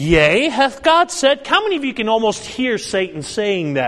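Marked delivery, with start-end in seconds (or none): 0.0-1.5 said lifted with rising, questioning intonation. Reading a bible question aloud at the question mark: questioning inflection on said. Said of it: "that your inflection has a question".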